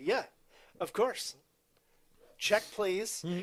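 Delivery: sarcastic, dismissive tone. Retelling how a man answered, thinking she was joking, retelling a sarcastic reply. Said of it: "And he's like sarcastically".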